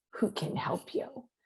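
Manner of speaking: soft, voiceless whisper, voice giving out. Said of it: "I'm losing my voice more and more here".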